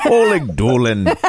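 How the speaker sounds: put-on Irish brogue on a name. Noting that a name sounds Irish, saying it in an Irish brogue. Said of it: "I wanted to say it with a brogue".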